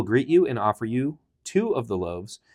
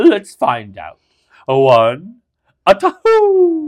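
belted, swooping delivery, two words stretched; 9 semitones higher, 11 dB louder than usual. Doing the owl from the Tootsie Pop ad, Mr. Owl voice. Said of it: "I'm doing the owl".

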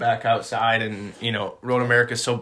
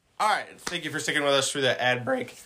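voice cracking and breaking mid-line; 3 semitones higher than usual. Podcast host returning from an ad break, voice cracking. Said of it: "Your voice crack".

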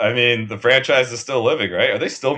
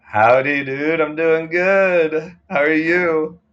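full-on lazy, laid-back stoner voice, pitched up; 6 semitones higher than usual. Podcast co-host answering the host's greeting, Dazed and Confused stoner voice. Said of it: "you went full on Dazed and Confused stoner voice".

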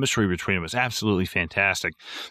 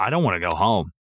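put-on crying voice. Retelling the last day of production: imitating Gene Wilder crying. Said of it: "he kinda started to cry".

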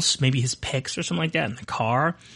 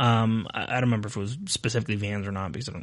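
ordinary talk, nothing marked

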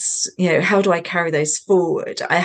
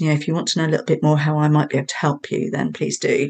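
speaking very quietly. Retelling approaching strangers in a supermarket: retelling speaking very quietly. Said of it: "says very quietly to them".

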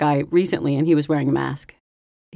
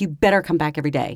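ordinary talk

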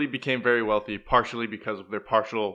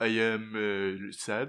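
put-on French accent, lower pitch; 3 semitones lower, 4 dB quieter than usual. Joking about a film actor doing a French accent: Hugh Jackman's French accent. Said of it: "They had him do a French accent".

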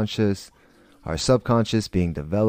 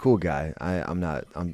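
plain

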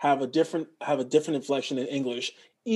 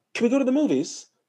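very high lift with British inflection; 9 semitones higher, 3 dB louder than usual. Making fun of a woman whose inflections started matching British people, mocking British-sounding inflection. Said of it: "her inflections started to match British people".

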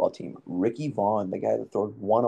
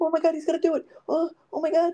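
mock freaking-out announcer call, very high pitch. Imitating a baseball announcer: imitating a freaking-out announcer. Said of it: "starts freaking out like that".

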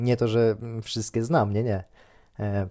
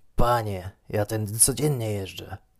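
put-on drunken man's voice. Retelling a drunk man excusing himself to the speaker, mimicking a drunk man's voice. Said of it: "zaczął się tłumaczyć pijackim głosem".

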